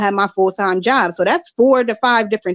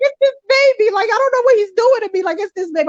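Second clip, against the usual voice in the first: overwhelmed, tearful crying in a very high voice; 12 semitones higher than usual. Retelling trying to give a speech while crying: imitating own past crying. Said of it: "I was crying the entire time".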